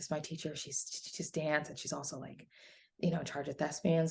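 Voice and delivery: soft, hushed whisper under the breath. Retelling meeting a teacher at back to school night, retelling a whisper. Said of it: "I was, like, whispering to her".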